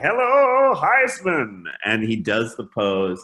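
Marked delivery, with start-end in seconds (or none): 0.0-1.6 put-on play-by-play announcer voice, very high, loud. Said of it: "and he's like".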